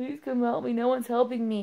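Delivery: mock crying, acted out. Speaker acts out nearly calling someone for help, imitating herself crying. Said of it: "I almost called Deb crying".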